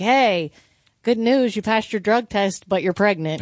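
ordinary delivery

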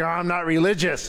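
put-on, suddenly shifted, put-off tone. Retelling a hospital visit after saying he's from the church: imitating a suddenly changed tone. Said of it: "even the tone of the voice, he's like".

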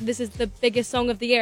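ordinary delivery

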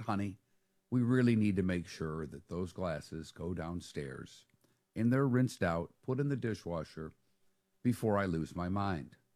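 very quiet, hushed, soft, low voice. A dad retelling what he said to his daughter, very quietly. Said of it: "I said very quietly".

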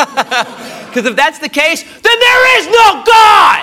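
slow, high, outraged shouting cry.

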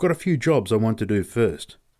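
ordinary delivery

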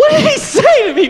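very high, wide-swinging, bewildered, confused voice.

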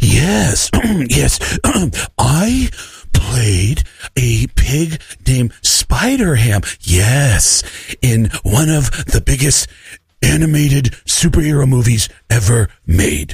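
moody, serious voice, taken slowly. Reading a second clue for a guessing game: moody Big J impression. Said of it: "this is my moody Big J".

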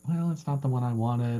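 ordinary delivery

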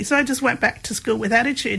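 ordinary talk

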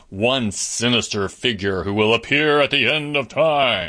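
dramatic, theatrical storyteller-style delivery. Describing a common belief to listeners, in a dramatic voice. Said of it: "You like my dramatic voice there?".

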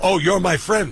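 put-on Staten Island accent. Speaker echoes the other person's words: Staten Island accent. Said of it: "I'll say that in the Staten Island voice".

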